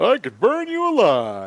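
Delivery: jovial, cheerful, jolly voice. Voicing jovial creatures making a threat: jovial whoopsie doozy voice. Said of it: "That's kind of the voice I imagine them all having".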